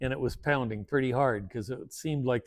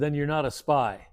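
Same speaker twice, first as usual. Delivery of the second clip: imitated grim, forceful delivery. Retelling what an official asked about spying: imitating a grim, forceful question. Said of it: "he said it very grimly and forcefully".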